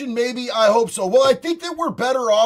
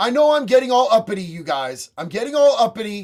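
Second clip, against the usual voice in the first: ordinary talk, nothing marked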